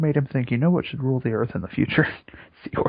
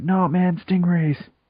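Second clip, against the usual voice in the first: put-on Australian voice, higher; 5 semitones higher, 3 dB louder than usual. Retelling what Steve Irwin might say: Steve Irwin impression. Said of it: "Is that your Steve Irwin impression?".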